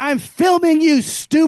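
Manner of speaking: very loud, drawn-out, high-pitched scream. Retelling screaming back at people banging on the garage door: retelling own scream. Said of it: "I was screaming back".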